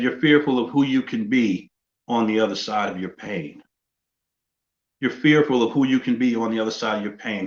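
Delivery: ordinary delivery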